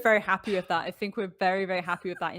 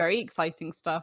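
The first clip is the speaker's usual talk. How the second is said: normal talking voice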